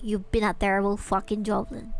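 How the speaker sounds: harsh, mean scolding tone. Playing a mean boss scolding a bad worker: mean boss scolding. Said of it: "I need to be mean to Knights".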